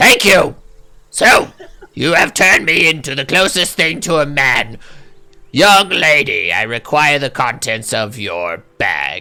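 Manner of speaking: harsh, grating goblin character voice. Just turned into a goblin, he speaks to the young lady, grating goblin voice. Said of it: "it's quite grating".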